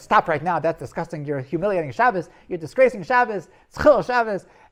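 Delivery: very loud, high, outraged, furious tone. Retelling how the Be'er Chaim stopped the joke: retelling an angry rebuke. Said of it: "he did not like this joke".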